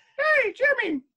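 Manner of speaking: very high voice of a talking magic flute. Asked to do it once again, the speaker does the Magic Flute voice. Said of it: "the Magic Flutes voice".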